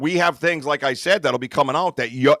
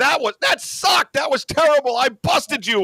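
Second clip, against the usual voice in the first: mock yelling, much higher, slower; 12 semitones higher than usual. Recounting a whistling match with Sasquatch, retelling yelling at Sasquatch. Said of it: "I started yelling at him".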